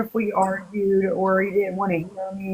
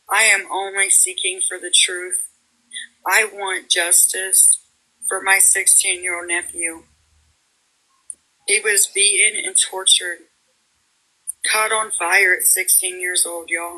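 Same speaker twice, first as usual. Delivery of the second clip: anguished voice full of pain. A woman pleads in a TikTok for justice for her sixteen-year-old nephew, pained voice. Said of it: "You can hear the pain in her voice".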